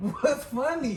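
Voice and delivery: spoken slowly through laughter.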